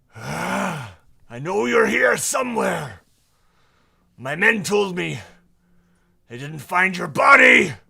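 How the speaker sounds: roaring bellow, very loud, high and rough. Game master voicing an unseen figure calling out between the tents, in a roaring voice. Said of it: "a roaring voice says".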